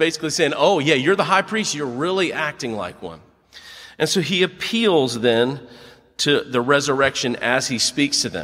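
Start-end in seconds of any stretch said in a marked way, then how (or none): 0.6-3.2 dry, mocking, sarcastic tone. A speaker explaining a bible passage, acting out a reply to the high priest, retelling a sarcastic remark. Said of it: "So sarcastically".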